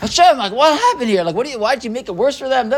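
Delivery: heated, high, rapid angry protesting tone. Retelling how Moshe goes to Hashem upset, acting out an angry complaint. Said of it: "He goes to Hashem angry".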